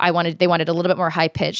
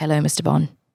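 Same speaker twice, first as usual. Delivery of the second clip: dropped, deep romance-novel voice. Showing off how low the voice can go: lowered voice. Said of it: "I can really lower my voice like".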